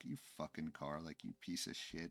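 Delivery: mock pissed-off swearing, hushed and angry. Recounting swearing at a car that beeped at them, retelling angry swearing. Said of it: "I sounded all angry and, you know, pissed off".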